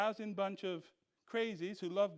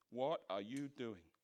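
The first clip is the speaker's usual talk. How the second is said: scornful, sneering, contemptuous, scoffing tone; 8 semitones lower, 5 dB quieter than usual. Retelling how people mock someone called by god: imitating a contemptuous scoff. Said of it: "they scoff contemptuously".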